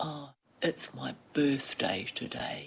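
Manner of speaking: soft, glum, gloomy mopey donkey voice. Retelling what the woman about to wash her hair said: Eeyore-like voice. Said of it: "in the most Eeyore-like voice".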